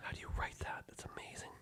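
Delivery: speaking in a whisper. Asking another speaker how they write that: whispering. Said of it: "I'm whispering".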